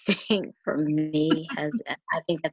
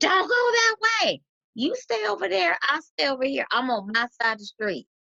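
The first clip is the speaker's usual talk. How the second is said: acted-out yell, higher pitch; 11 semitones higher than usual. Acting out someone yelling from across the street: imitating someone yelling. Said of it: "somebody's yelling".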